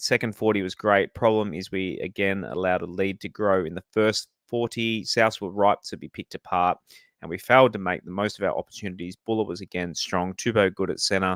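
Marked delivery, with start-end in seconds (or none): none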